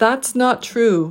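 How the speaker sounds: all three words stressed evenly, slow, "true" jumping up then dropping.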